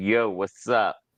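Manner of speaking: New Jersey accent. Saying their accent has come back, the speaker shows it off in a New Jersey accent. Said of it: "got my Jersey accent back".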